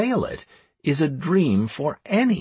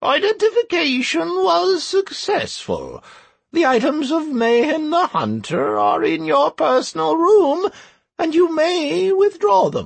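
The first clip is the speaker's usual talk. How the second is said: drawling, very high, squeaky little gremlin voice; 14 semitones higher, 4 dB louder than usual. In a fantasy story, a small gremlin answers a withdrawal request; drawling, squeaky gremlin voice. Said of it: "The drawling and somewhat squeaky voice belonged to a small gremlin".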